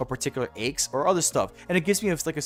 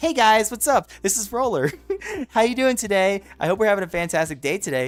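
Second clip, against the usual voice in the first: higher, louder, cute-sounding voice; 7 semitones higher, 6 dB louder than usual. Demonstrating what lifting their own voice sounds like, in a lifted, higher voice. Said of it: "I'm lifting it. I'm making it higher".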